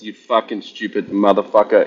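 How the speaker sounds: put-on accent from Iceland. Quoting a friend's favourite line: imitating an Icelandic accent. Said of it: "in that Iceland accent".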